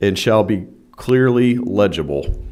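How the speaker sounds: slow, loud, dictation-like pace.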